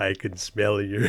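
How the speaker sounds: deep, low, slow, drawn-out voice. Retelling a gamer's line from a video: Morgan Freeman voice. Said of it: "but in a Morgan Freeman accent".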